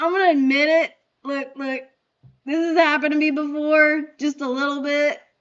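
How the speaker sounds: grudging, reluctant delivery. Imitating another speaker admitting an embarrassing accident: imitating him admitting it. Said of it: "He's like".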